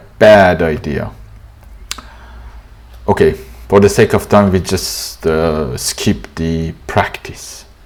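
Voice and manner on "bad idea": bad stressed in bad idea. In an American pronunciation lesson on a phrase, stress on bad. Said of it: "Stress on bad in bad idea".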